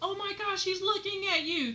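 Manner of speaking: put-on very high call, half-yelled. Telling a story, the speaker quotes a guy friend calling to another guy: retelling a kind-of yell. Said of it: "He kind of like yells at the guy".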